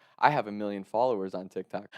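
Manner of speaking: ordinary talk, nothing marked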